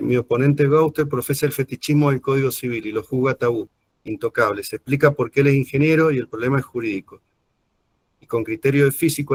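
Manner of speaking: ordinary talk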